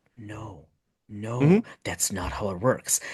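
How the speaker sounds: hushed, slow muttering under the breath. Retelling a reaction in the theater when a character died: imitating muttering under breath. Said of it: "under my breath".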